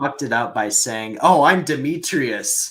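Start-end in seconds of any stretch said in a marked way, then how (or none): 1.2-2.7 loud, hammy put-on character voice, hamming it up. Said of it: "playing a character and, like, hamming it up".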